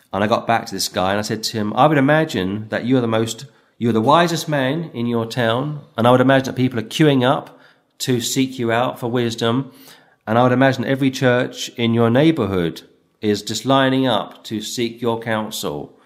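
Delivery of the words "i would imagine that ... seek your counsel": usual speaking voice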